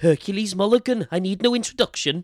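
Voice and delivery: terrible Welsh accent, very high and loud. Imagining Hercules Mulligan introducing himself, in a terrible Welsh-accent Hercules Mulligan voice. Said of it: "I'm sorry for the terrible Welsh accent".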